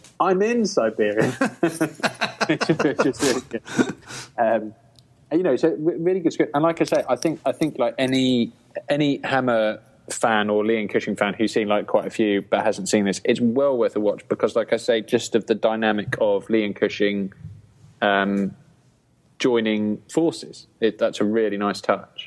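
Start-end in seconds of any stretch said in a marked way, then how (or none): 0.2-1.3 high, incredulous. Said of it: "he looks at it incredulously and goes".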